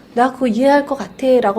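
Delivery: normal talking voice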